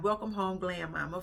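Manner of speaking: usual speaking voice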